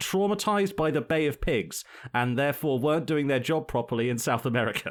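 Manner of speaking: ordinary talk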